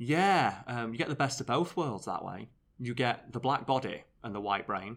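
plain

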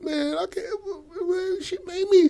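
very high voice, sobbing through the words. Retelling how she was handcuffed from behind, the speaker voices her, imitating Mary Beth crying. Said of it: "Mary Beth starts crying".

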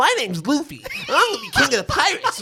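very high, loud, drawn-out shrill cartoon voice. Showing the others an impression of Luffy's voice: Luffy voice. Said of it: "I could do Luffy's voice right now".

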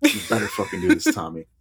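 mock menacing, threatening and insistent, with a swear. Joking about Mark Hamill pushing Tommy to take his job: imitating Mark Hamill threatening. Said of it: "Starts getting really, like, threatening".

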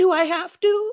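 very high-pitched and loud voice. Chatting about favorite cartoon voices, quoting a Family Guy bit as a Minnie Mouse impression. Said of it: "Minnie in Family Guy, where she goes".

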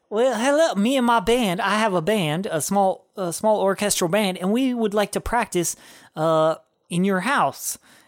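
put-on learned southern gentleman accent. Retelling a story, speaking as the man, Hanks southern gentleman voice. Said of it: "like a southern, Southern gentleman".

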